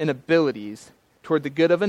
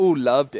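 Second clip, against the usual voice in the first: heavily sarcastic, fake-pleased tone; 3 semitones lower than usual. Showing how the word love can be said: sarcastic. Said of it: "you even might hear it sarcastically".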